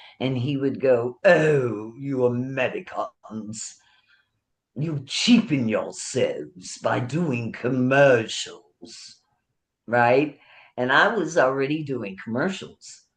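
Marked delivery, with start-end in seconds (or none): 1.3-9.2 put-on British accent, professor-like voice. Retelling what a senior acting teacher used to say: imitating a British professor. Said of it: "British, uh, professor is my senior acting teacher".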